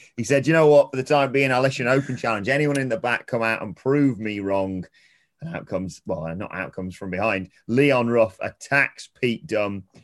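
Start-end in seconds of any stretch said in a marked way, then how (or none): 0.5-4.9 put-on slightly higher Birmingham accent. Retelling a wrestler's open challenge, Pete Dunne Birmingham accent. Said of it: "I'm allowed to do the accent".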